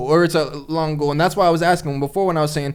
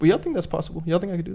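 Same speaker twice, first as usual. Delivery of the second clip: cracking, breaking voice, sounding unsure and unconvinced; 6 dB quieter than usual. Asking friends if they think the goal is possible: voice cracking, unsure. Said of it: "I hear the crack in your voice".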